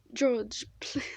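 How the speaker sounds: attempted British accent. The speaker tries out a line, attempted British accent. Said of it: "I forgot I was gonna attempt my British accents".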